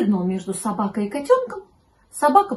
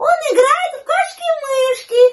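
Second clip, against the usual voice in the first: louder still, much higher pitch; 12 semitones higher, 6 dB louder than usual. Narrator reads the kitten answering the puppy, even louder. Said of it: "еще громче ответил котенок".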